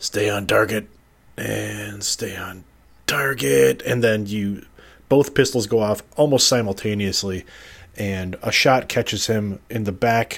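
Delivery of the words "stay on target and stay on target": slow mutter under the breath. Narrating a gunfight, voice the shooter raising both pistols, muttering under his breath. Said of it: "you hear kind of under his breath".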